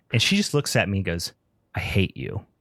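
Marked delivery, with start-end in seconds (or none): 1.7-2.4 put-on, venomous, hissing whisper. Retelling how Kate answered while watching the movie: imitating Kate's venomous tone. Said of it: "just venom".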